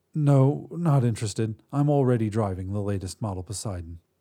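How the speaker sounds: ordinary delivery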